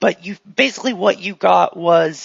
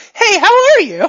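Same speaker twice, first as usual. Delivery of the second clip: high, loud, cheery chirp like a rebooted robot. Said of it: "blurs for a second".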